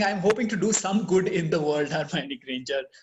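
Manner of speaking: usual speaking voice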